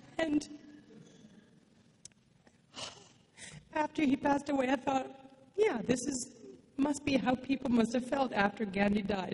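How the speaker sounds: crying while speaking. Speaker talks about someone close who passed away, crying. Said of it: "I'm crying today".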